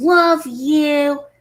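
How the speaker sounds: put-on angry voice. Recounting a man's attitude during an argument, in a mock-angry tone. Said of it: "talked like this in an angry tone".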